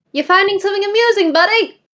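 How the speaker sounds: very high-pitched, loud voice projected outward. After a chuckle from the clearing, the speaker speaks as Lynn, Lynn voice. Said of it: "Lynn raises her hand to the others, just like a silence motion".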